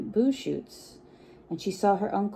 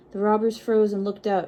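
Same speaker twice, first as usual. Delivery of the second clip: usual speaking voice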